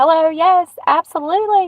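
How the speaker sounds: polite phone voice. Speaker shows how they would answer if you called; phone voice. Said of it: "we got our phone voice".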